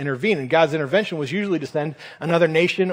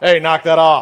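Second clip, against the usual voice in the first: put-on scolding dad voice, louder; 8 dB louder than usual. Explaining Peter rebuking Jesus, the speaker puts on a mock dad-voice correction. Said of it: "It's the dad voice correction".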